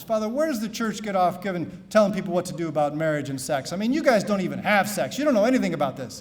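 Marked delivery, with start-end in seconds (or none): none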